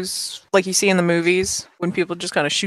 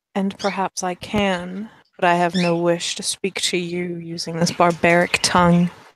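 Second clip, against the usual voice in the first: intimate, unhurried, gentle, close-up delivery. Voicing a woman who leans in close to speak to Sindri, very soft voice. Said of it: "in a very soft voice".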